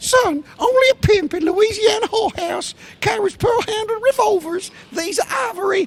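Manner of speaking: very high, squeaky put-on voice. Quoting Patton while doing his voice: high squeaky Patton voice. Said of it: "I'll do his voice".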